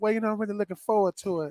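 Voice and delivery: fast, soft, smooth Mississippi voice. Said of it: "that's the Mississippi smooth voice".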